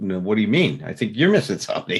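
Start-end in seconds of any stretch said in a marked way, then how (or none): 0.0-0.8 mock-combative tone, higher and slower. Retelling an argument, the speaker acts out the man's challenging reply: imitating a combative retort. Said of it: "He wants to fight with me".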